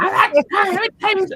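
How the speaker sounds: put-on very high, loud, tired, sad drunk insistence. Retelling a tired daughter's words: imitating a tired sad drunk. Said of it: "with a sad drunk".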